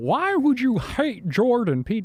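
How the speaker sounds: very high, swooping, slow put-on voice, every word dragged. Speaker tries an impression of someone he discusses: Jordan Peterson impression. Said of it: "I'm trying to do an impression of him".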